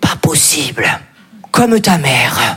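put-on old grandmother voice, low-pitched and slow.

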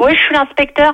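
normal talking voice

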